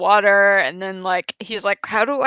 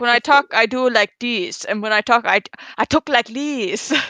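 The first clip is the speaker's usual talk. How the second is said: put-on Spanish accent with altered inflection; 2 semitones higher than usual. Speaker describes a Game Grumps host's accents, imitating Danny's Cortez accent. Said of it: "his like Hebrew accent is kind of the same as his Spanish Spanish accent".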